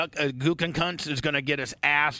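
normal talking voice

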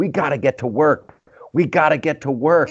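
high-pitched mild yell. Describing a man ripping down a sign, imitating someone screaming. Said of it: "the whole time he's like screaming".

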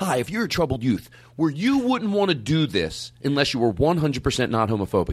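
ordinary delivery

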